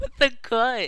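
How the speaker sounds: high voice cracking, breaking mid-phrase. A player reacts mid-game, voice cracking. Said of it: "And my voice just cracked".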